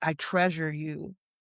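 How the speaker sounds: normal talking voice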